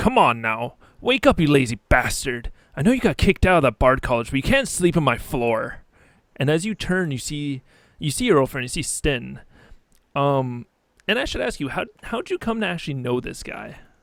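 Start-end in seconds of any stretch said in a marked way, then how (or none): 0.0-5.8 loud, rousing call, called out. Voicing a friend who shakes the player awake: voicing Sten. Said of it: "and you hear".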